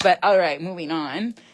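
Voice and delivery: normal talking voice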